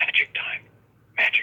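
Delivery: put-on quiet mutter under the breath. Recalling an actor's line just before action is called, acting out an under-breath mutter. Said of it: "he'd say under his breath".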